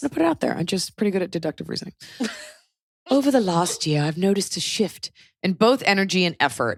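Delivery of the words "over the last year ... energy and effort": put-on British accent creeping in. Talking with another speaker, who hears it starting: British accent. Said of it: "I'm doing the British accent".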